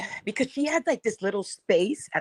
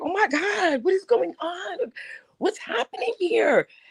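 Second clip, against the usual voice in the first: shrill, very high scream at full lungs; 12 semitones higher than usual. Retelling how Lovely T reacted to people heckling a woman, imitating Lovely T screaming. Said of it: "He was screaming at the top of his lungs".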